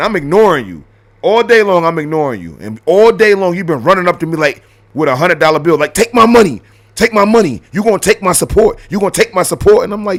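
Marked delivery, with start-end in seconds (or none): 5.9-9.8 high, insistent, pushy pleading tone. Acting out someone running up waving money: imitating someone pushy begging. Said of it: "If you run up to me and be like".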